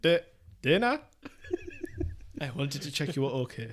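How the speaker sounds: halting, stop-start, swooping creepy voice.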